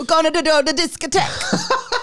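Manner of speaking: bad, fake northern English Burnley accent, high, swooping. Doing a joke bit that a listener says sounds like Burnley: bad accent. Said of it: "You sounded like you were from Burnley".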